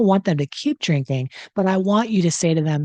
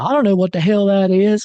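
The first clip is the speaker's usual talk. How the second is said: unplanned southern US accent slipping in; 3 semitones higher, 4 dB louder than usual. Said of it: "I don't know why I'm having a southern accent right now".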